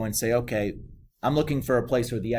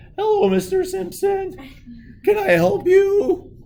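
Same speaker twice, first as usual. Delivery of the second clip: put-on very high, drawn-out, raised teen clerk voice; 7 dB louder than usual. Speaker imitates the teenage store clerk from The Simpsons, Simpsons teen clerk impression. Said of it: "that guy that the teenager that's always working".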